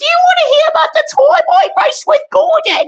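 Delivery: very high, loud, bright, belted-out voice. Playing with toy trains and voicing one of them, Philip impression. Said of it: "That's my Philip impression".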